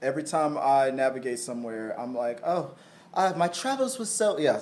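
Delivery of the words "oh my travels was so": fake, proper-sounding British accent. Describing navigating with a GPS set to British voice: put-on British accent. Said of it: "to a British voice".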